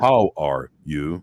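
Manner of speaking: put-on robotic voice of a kids' learning toy. Reminding listeners of the toy: Speak & Spell voice. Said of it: "y'all remember what that speak and spell is".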